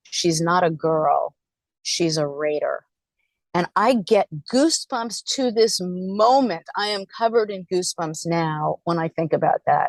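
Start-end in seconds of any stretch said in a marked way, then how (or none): 0.1-2.8 imitated booming voice. Retelling a football player's reply to the media: imitating a booming voice. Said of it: "in his booming, booming voice".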